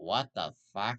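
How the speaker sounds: deep cartoon-character voice. His best Mike Wazowski impression, the character saying a curse word. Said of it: "That was my best Mike Wazowski impression of him saying a curse word".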